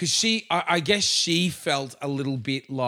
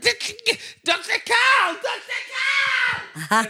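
play-acted, desperate, very high, stretched-out screaming; 3 dB louder than usual. Retelling how a tickled girl screamed out a name in desperation; imitating her screaming. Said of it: "she started screaming out like".

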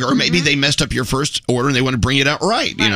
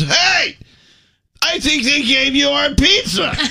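play-acted, very high, sloppy, sozzled drunk voice; 12 semitones higher than usual. Retelling what a tipsy man at their table said, imitating a sloppy drunk voice. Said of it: "with his sloppy-ass drunk voice and says".

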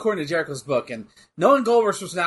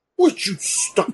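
put-on announcer scream; 5 semitones higher than usual. Remembering old WWF broadcasts, redoing the announcer's scream: Gorilla Monsoon screaming impression. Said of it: "There you go".

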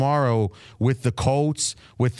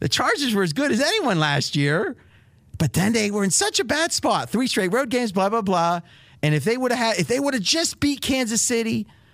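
slightly whiny, pitched-up, less masculine voice; 9 semitones higher than usual. Demonstrating a different voice for another speaker, slightly whiny put-on voice. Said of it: "See how this person's a little whiny, not as masculine?".

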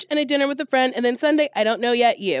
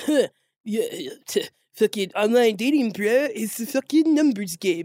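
typical dudebro voice. Mocking how men talk about online dating, imitating a dudebro. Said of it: "dudes are always like".

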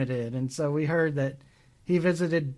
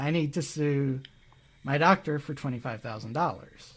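plain

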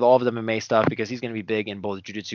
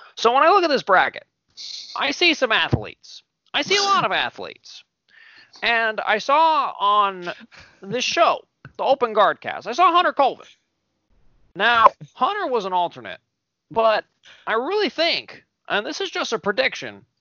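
very high, animated, swooping sing-song with swinging pitch; 12 semitones higher than usual. Performing an impression after being asked to do it: Chael Sonnen impression. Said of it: "you gotta do it for Hunter".

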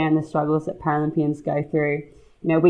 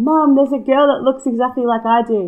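put-on high-pitched young girl screaming out; 8 semitones higher, 4 dB louder than usual. Retelling what a young girl said on seeing the cutout: imitating a girl screaming out. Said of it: "she just screamed out".

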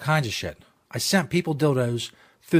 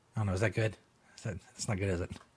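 normal talking voice

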